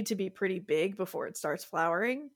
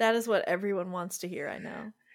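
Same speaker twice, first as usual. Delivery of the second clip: ordinary talk, nothing marked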